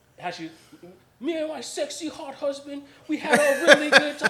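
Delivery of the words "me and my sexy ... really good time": very high, very loud promo-style delivery. Imitating a wrestler's promo: imitating Becky Lynch doing Trump delivery. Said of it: "all of that is Donald Trump".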